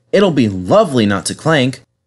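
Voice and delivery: ordinary delivery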